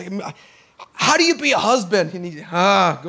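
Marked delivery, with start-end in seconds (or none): 0.0-2.1 worried, unsure, nervous, anxious voice. Retelling what he told his dad on the phone, retelling his nervous self. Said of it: "I'm so nervous".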